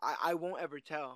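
put-on nervous delivery. Discussing a film scene, the speaker quotes a character's line, acting it out nervously. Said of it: "She says nervously".

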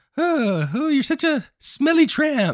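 mock very high, slow, nice, cheerful upbeat tone. Retelling how Ray insults his wife in a nice upbeat tone. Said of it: "says it in, like, a nice, upbeat tone of voice".

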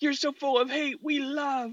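mock very high, shrill, high-pitched yelling rant. Describing an imagined scene, acting out another man yelling at them. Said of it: "yelling like how bigoted we are".

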